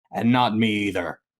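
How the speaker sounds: sullen, low voice. Narrating a dwarf's reply to the players in the game, surly. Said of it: "with a very, very surly expression and says".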